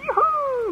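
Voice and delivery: high-pitched, put-on joyful shout. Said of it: "they already start shouting, going".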